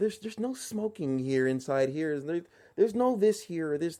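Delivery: mocking, scornful store-clerk voice. Telling how staff treat you in a store: mocking store clerk voice. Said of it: "You know how they be doing their voice".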